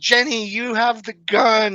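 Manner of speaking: very high, stretched-out scream. Retelling a bear encounter, yelling to the woman with the gun, retelling a scream. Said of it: "and I scream at her".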